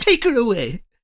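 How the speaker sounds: fake upper-class British accent. Imitating an actor's on-set Darth Vader line in his accent: David Prowse accent. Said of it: "David Prowse doing his accent".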